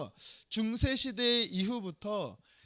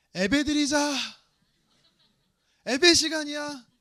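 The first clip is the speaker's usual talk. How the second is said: put-on raised Jeolla regional accent; 5 semitones higher, 7 dB louder than usual. Recall your mother from Jeolla calling you and your brother to family worship, imitating her Jeolla dialect. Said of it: "저희 어머니가 전라도 분이신데요 ... 저희 어머니는 예배라고 발음합니다".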